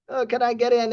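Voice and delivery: acted-out begging, mock pleading tone. Retelling how a guy on Instagram asked to get in, imitating someone begging. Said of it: "He begged me, like".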